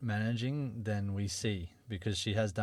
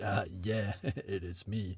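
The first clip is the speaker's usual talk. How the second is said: deep bassy voice, very slow and drawn out; 4 dB quieter than usual. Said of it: "obviously a deep bassy voice".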